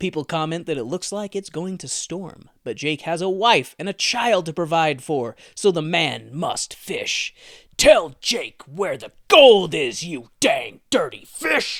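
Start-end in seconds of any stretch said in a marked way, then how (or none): 7.8-11.8 very loud put-on voice, pushed deep and low. Acting out a line by Jake while summarizing a story: attempted deep voice as Jake. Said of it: "not meant to try and have a deep voice".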